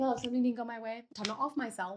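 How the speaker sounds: usual speaking voice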